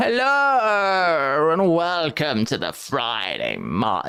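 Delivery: very slow, painfully drawn-out delivery. Describing how a video host opens every episode, imitating very slow speech. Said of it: "That's how slow he speaks".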